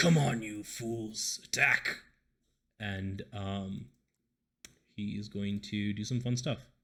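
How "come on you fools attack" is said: bellowing brute's roaring war cry. Voicing an Orog charging a large group: roaring. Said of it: "he kind of roars and says".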